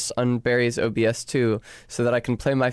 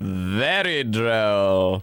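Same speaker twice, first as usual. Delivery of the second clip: low voice, drawn-out delivery, "very" stretched; 4 semitones lower than usual. Imitating how the guy from Doctor Who says very droll. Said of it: "He goes like".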